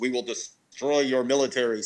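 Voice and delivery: menacing, ominous, otherworldly alien voice. Imagining an alien voice coming over the air in Iraq, ominous alien voice. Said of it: "some ominous alien voice comes over and says".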